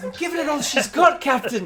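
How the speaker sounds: booming, very loud, very high Scottish brogue. During a starship game, a crew member answers the captain in a sudden Scottish accent. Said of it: "He suddenly develops a Scottish accent and says".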